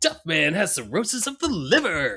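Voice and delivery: grave and solemn, high, swooping pitch. Speaker quoting a line the character says, Duffman voice. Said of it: "when he actually says something serious in that voice".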